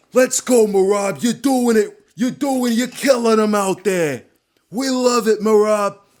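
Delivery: put-on loud, high, belted New York accent. Retelling a fight corner's pep talk: imitating Ray Longo's New York accent. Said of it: "Ray Longo in his New York accent".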